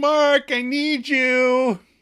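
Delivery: slow, very high, drawn-out hollering. Retelling a character calling for help on her first day: imitating someone yelling. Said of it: "So she yells".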